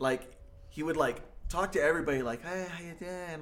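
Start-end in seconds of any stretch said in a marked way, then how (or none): 2.4-3.4 put-on nice-guy voice, all nice and friendly. Retelling how the friend greeted everybody in character: imitating Leah, all nice. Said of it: "all nice".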